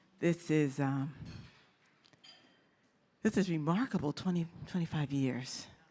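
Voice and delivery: holding back tears. Speaker giving remarks on a 25-year milestone, holding back tears. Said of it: "I'm going to try not to cry".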